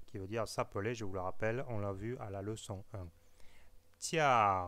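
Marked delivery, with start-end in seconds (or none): 4.0-4.7 tiao pronounced with tone sliding from high to low. Chinese tone lesson given in French: falling tone on tiao. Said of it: "vous pouvez entendre ma voix qui va de l'aigu au grave".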